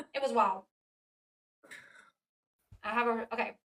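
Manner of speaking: talking with food in mouth, muffled. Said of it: "I have food in my mouth".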